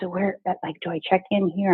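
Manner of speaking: whispering. Retelling asking where to check in before a talk: imitating own whisper. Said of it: "I'm literally whispering".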